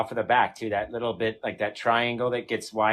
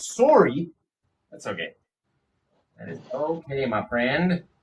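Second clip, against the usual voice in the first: lightly done, put-on Canadian-style accent; 4 semitones higher than usual. Replying to someone's apology for their dogs, in a put-on Canadian accent. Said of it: "I tried to imitate it".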